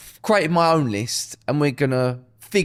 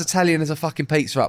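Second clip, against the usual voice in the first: ordinary delivery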